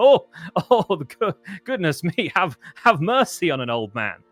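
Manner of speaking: breathless, winded, loud half-laugh, shocked. A game narrator voices an old man struck in the ribs: winded, half laughing. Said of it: "half laughing and half in a little bit of shock and winded".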